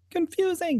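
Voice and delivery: tiny, soft, very high-pitched squeak. Describing a drawing where Cuphead says one word: little tiny Cuphead voice. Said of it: "in his little tiny Cuphead voice".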